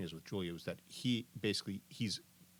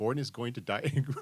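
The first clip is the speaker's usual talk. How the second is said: ordinary talk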